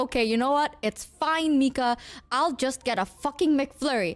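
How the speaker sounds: plain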